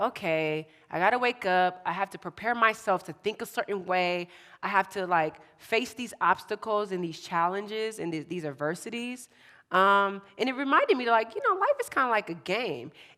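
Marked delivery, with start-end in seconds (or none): none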